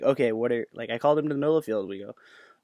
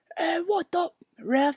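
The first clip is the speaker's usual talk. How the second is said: put-on tough macho yell. Retelling to a listener how a man yelled from the back about a kid; put it on as an imitated tough macho yell. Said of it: "instead of all the parents kind of just going".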